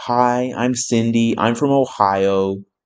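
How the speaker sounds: very slow, stretched-out put-on American accent. Mimicking americans introducing themselves, in an american accent. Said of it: "I'm not going to keep on doing American voice".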